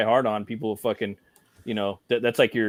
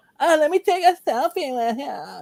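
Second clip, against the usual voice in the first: put-on very high, swooping, drawn-out valley girl talk; 3 dB louder than usual. Retelling a movie scene, quoting the blonde valley girl in a valley girl voice. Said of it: "the blonde fucking Valley girl".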